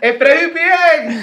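loud shout. Recalling van rides to the beach and calling for a stop, retelling a shout to the driver. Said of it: "le gritabas".

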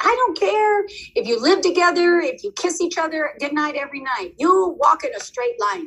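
stern, high-pitched teacher-style shout. Speaker retells what she always tells the kids, acting out her own yelling. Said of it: "So it does sound like yelling".

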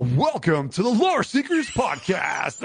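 high, pumped-up, hyped sportscaster delivery. Recounting a podcast intro redone for Jibs, the speaker performs it in sportscaster voice. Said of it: "It sounded like a freaking sportscaster".

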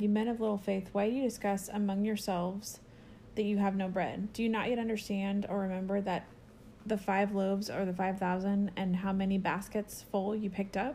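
ordinary talk, nothing marked

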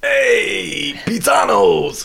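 belted out high and hoarse. Quoting the Mario show host in his voice: Captain Lou Albano as Mario. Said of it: "Captain Lou Albano?".

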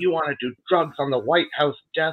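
hostile taunting, high-pitched and screaming. Retelling a TV host's attack on a guest: imitating Morton Downey Junior screaming. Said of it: "he's screaming at him and calling him a junkie".

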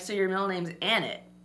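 ordinary talk

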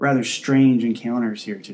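ordinary delivery

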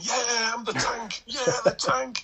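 shrill, high, stretched-out, drawn-out triumphant scream. Retelling a player running to the supporters after a win: imitating someone screaming. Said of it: "and screaming".

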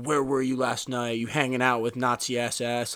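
mock-furious tone. Retelling a man phoning Jasmine during filming: imitating someone super pissed. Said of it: "he's super pissed. He's like".

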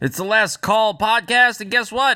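strained, high, loud voice. Podcast host opens the show after smoking a cigar, strained voice. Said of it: "I have got a strained voice because I decided to smoke a cigar".

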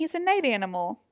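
usual speaking voice

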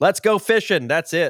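hyped, loud high shouting.

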